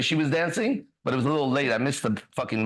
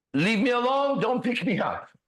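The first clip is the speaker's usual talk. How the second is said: raised, pitched-up yell; 9 semitones higher than usual. Retelling a fall, yelling at people rushing to pick them up: retelling a yell. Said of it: "and I'm yelling".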